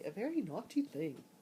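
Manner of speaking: clumsy, bad, put-on English accent. Saying a phrase as friends in England would: bad English accent. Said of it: "That was my English accent. I know it sucked".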